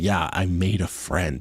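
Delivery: mock exhausted tone. Speaker quotes a woman saying she made a friend, imitating an exhausted tone. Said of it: "she sounded exhausted even having to say".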